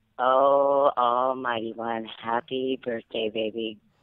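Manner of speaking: seductive, sultry voice, low, very slow, drawn out. Asked to say it again, the speaker gives a birthday greeting in a sexy voice. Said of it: "in that sexy voice again".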